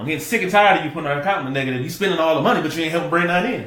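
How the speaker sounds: fast, loud, high accusing and fed-up tone. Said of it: "if I go to you like that".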